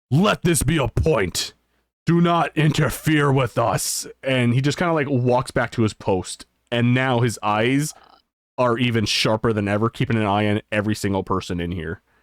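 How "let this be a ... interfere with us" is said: slow, loud, drawn-out shout. Voicing a guard warning everyone not to interfere: shouting out loud. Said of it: "just shouts out loud".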